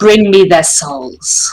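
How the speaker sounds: low, deep, imperious commanding voice. A game master voices an unseen figure commanding the party, deep booming commanding voice. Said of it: "a deep, booming voice commands".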